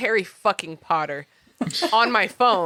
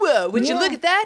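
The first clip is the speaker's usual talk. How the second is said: small, silly, higher little voice; 8 semitones higher than usual. Acting out a character cleared of all charges: little voice like Mike Brooks' husband. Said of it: "that little voice I did".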